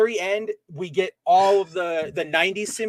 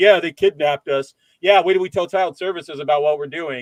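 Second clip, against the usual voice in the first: put-on bratty, snide, sarcastic teenager voice; 2 semitones lower, 4 dB louder than usual. Retelling a movie scene, quoting the rebellious teenage daughter: imitating a sarcastic teenager. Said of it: "making those teenager sarcastic comments like".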